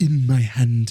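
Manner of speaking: put-on filmmaker voice with German accent. Imagining a different actor in Colin Firth's part, say his line in a Werner Herzog voice. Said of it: "imagine Werner Herzog".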